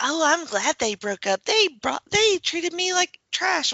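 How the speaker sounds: put-on high childlike voice. Retelling what Bayley said in the interaction: imitating Bayley sounding like a child. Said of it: "Bayley just sounds like a child".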